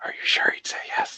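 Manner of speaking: barely audible, very quiet, hushed whisper. During a role-play scene, a character shuffles close and asks, in a very quiet voice. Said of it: "in a very like very quiet voice".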